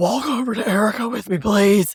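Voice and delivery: chilly put-on voice, coolly polite, frosty, scary-sounding. Retelling how Luann asked Kyle to walk her over: imitating Luann's voice. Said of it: "her voice, yes".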